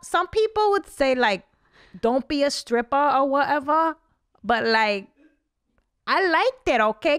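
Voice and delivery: high, unfiltered, stream-of-consciousness rambling chatter. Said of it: "That's such a good impression".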